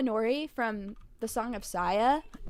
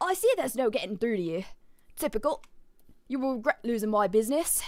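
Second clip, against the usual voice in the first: put-on, half-remembered British accent; 5 dB quieter than usual. Customer being thrown out of a store answers the clerk, attempted British accent. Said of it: "I forgot how to do a British accent".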